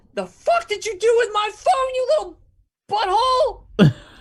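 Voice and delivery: very high, shrill, enraged, furious screeching. Voicing a kid who runs past and screams at Dougie: screaming in anger.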